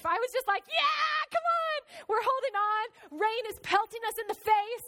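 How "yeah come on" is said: put-on high, thrilled, excited shout through laughter. Retelling a wild ride in pelting rain, retelling screaming and laughing. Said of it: "I'm like screaming and I'm laughing".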